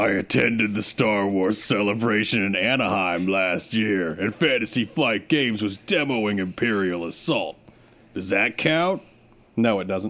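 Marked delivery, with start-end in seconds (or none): 0.0-9.0 deliberately gruff put-on voice. Reading a listener's message aloud as Rodney: put-on gruff voice. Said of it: "You're gonna be gruff".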